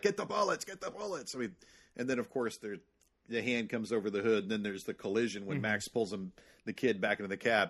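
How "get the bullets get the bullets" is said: mock scream, pitched very high. Recalling a childhood movie scene, imitating Max screaming at the feral kid. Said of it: "Max just screaming at him like".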